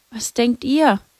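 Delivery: meek, timid, sheepish tone. In the garden, she asks the others what they think: meek, timid. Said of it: "fragte Lucia kleinlaut".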